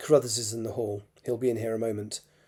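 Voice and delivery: ordinary delivery, nothing marked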